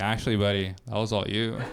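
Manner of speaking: ordinary talk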